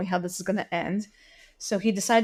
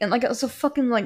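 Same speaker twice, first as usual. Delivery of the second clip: ordinary talk, nothing marked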